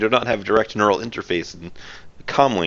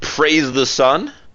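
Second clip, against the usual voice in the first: mild, high-pitched rallying call, knight-like character voice; 5 semitones higher than usual. Voicing a knight in battle, a man yelling out. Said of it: "You will hear a man yell out".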